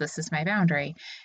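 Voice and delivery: ordinary talk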